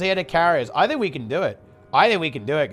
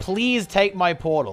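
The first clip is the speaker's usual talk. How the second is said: mock pleading voice. Playing a game and voicing someone who begs: imitating someone begging. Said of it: "He's, like, begging me".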